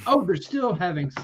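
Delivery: plain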